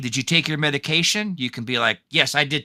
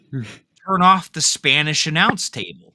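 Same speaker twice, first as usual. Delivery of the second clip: plain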